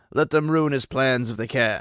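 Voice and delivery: strong, commanding man's voice. Reading aloud the great master answering his frightened servant: deeper, stronger voice of command. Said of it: "His voice is a little deeper and stronger".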